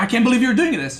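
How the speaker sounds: voice full of emotion, upset. Retelling what the opponent said during a dispute: imitating Marine Lord getting emotional. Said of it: "He starts getting emotional".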